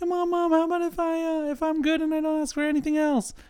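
put-on very high, cracking ten-year-old voice. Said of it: "I'm trying to be, you know, ten-year-old [name]".

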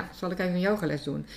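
ordinary talk, nothing marked

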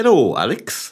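put-on sing-song Scottish accent. Joking around during the podcast, one host addresses Alex as a Chris Hoy accent impression. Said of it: "what are you doing that accent?".

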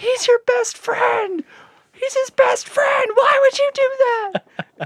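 very high, shrill, very loud crowd screaming. Describing film screenings where the crowd yells at a character, imitating audience screaming. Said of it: "people are screaming".

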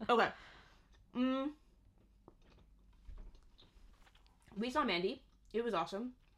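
talking while chewing into mic. Speaker keeps telling the story while eating fudge, talking while chewing into the mic. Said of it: "don't chew into the microphone".

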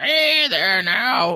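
put-on very high, cranky, swooping old crone voice. Explaining how they voice characters, demonstrating an old crone voice. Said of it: "I can do an old crone".

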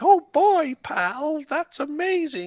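loud squeaky voice, stretched out. Imagining how the character would react to a gift: Mickey Mouse voice. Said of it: "He'd be like".

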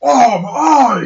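grown man's scream. Acting out a character hit in the eye: screaming like a grown man. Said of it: "Start screaming like a grown man".

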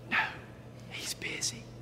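put-on little boy's very soft, hushed whisper. Telling a joke, voicing a little boy on the phone: imitating a whispering little boy. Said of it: "whisper again".

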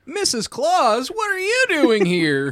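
very high, slow, swooping, drawn-out character voice. Greeting Missus Claus in character: voice like Don Knotts. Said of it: "Why do I sound like Don Knotts".

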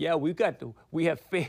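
attempted put-on Russian accent. Retelling a prank call from Russian radio guys: attempted Russian accent. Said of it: "I can't even do my Russian accent tonight".

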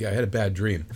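normal talking voice

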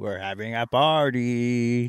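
slow, creepy voice with "party" drawn out. Asking another speaker about a masked killer's voice: imitating Davey's creepy voice. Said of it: "his voice when he's like".

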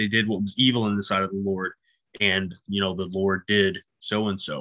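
ordinary talk

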